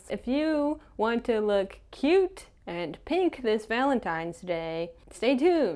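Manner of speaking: news anchor delivery. Opening a valentine's day makeup tutorial: newscaster voice. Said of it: "I don't know why I'm talking like a newscaster".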